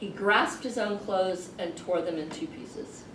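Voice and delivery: plain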